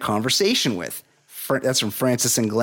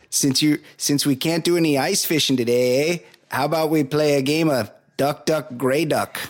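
put-on Canadian accent, much higher; 3 semitones higher than usual. Playing a Minnesota teacher addressing the class, in a Canadian accent. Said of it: "that's my Canadian guy".

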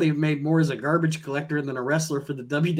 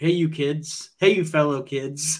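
put-on voice of an adult posing as a kid. Joking that two wrestlers came off like Buscemi: Steve Buscemi impression. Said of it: "they essentially came off like Buscemi".

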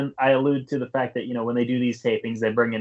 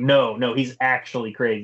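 firm, emphatic, insistent, with hard stress. Retelling a wrestler's insistence after an autograph: imitating an emphatic insistence. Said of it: "he had to emphasize".

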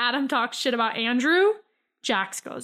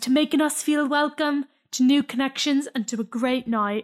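put-on Geordie accent from Newcastle. Recapping a toast from the show, quoting Adam: Geordie accent imitating Adam. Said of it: "It's a great Geordie accent".

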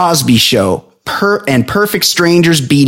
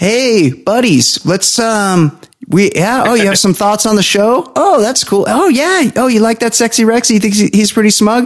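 mocking teasing impression with raised pitch; 7 semitones higher than usual. Imitating the other speaker chatting with buddies about the show: imitating the other speaker. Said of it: "here's you".

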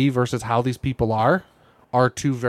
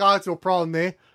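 jokey put-on Canadian accent with "eh"; 5 semitones higher than usual. Joking about Canadians on a drama show: mock Canadian voice. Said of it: "And then the other guy's like".

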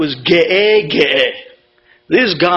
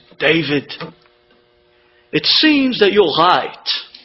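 thick, heavy put-on German accent. Retelling a doctor's phone call about a blood test: imitating a heavy German accent. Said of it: "with a heavy German accent".

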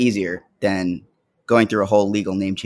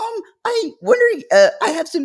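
deliberately raised, higher-pitched put-on voice; 12 semitones higher than usual. Speaker acting out asking someone for help, retelling own higher voice. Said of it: "my voice higher gets voice. higher".

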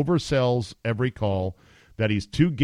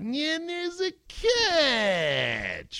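very high, very slow whine, "catch" stretched out; 4 dB quieter than usual. Mocking a play-by-play announcer's lack of energy: imitating Al Michaels whining. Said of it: "he brings no energy, and he whines a lot".

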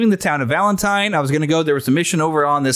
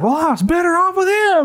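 very high, fussy, griping woman's voice; 13 semitones higher than usual. Retelling a botched rescue, voicing the rescued woman afterward: imitating a fussing woman. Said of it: "And she's fussing".

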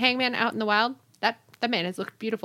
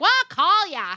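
terrible put-on Long Island accent, high, loud; 10 semitones higher, 5 dB louder than usual. Retelling what a woman said back to him, bad Long Island accent impression. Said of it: "That was a terrible impression".

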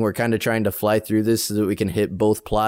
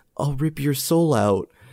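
eerie, menacing, creepy, high-pitched; 5 semitones higher than usual. Retelling a movie's opening scene, quoting the daughter's threat: creepy voice. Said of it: "this real creepy".

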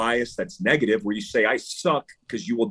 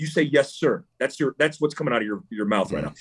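imitated raised voice. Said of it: "I raise the tone of my voice".

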